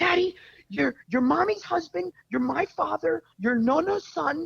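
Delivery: put-on shrill little girl's yell, pitched way up. Retelling his four-year-old daughter scolding him, imitating a little girl yelling. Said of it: "she comes in the bedroom and she yells at me".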